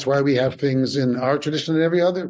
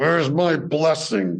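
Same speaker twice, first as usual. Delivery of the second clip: acted speaking through clenched teeth. Retelling what a child said mid-argument, imitating speaking through gritted teeth. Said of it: "And through gritted teeth".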